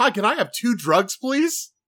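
very high, slow, overly nice, sweet politeness. Acting out an undercover cop buying drugs: mock overly nice asking. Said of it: "You would be so nice about it".

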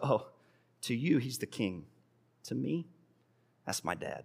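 soft, with light laughter running through. Retelling a little boy's answer after being told he disturbs the king's council; retelling a boy laughing slightly. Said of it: "with a slight laughter in his voice".

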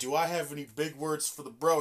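plain

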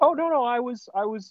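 put-on high, dopey Canadian accent. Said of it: "he will speak in that voice".

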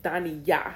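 stress on final syllable Yah. Explaining how to pronounce a name, stress on final syllable yah. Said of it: "The emphasis is on Yah".

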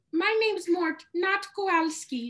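squeaky, very high cartoon voice. Explaining a Penguins of Madagascar scene to listeners, doing Mort's voice. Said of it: "Mort comes in and he goes".

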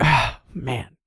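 mock muttering under the breath. Retelling what he mutters after each landing, imitating muttering under his breath. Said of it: "says something under his breath like".

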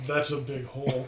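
dry, level, flat deadpan understatement. Retelling what the dad says when he looks at it: imitating a deadpan line. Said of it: "the dad just looks at it and deadpans".

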